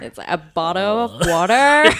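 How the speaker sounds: put-on Californian accent. A guest told she can drop her british accent tries a californian accent. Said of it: "Let me go change into a Californian accent".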